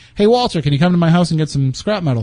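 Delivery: ordinary delivery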